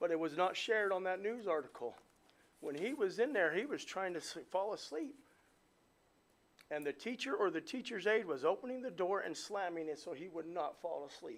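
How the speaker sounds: emotional, upset voice full of feeling. A father describes how a teacher treated his son, emotional. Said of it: "I'm sorry to get emotional".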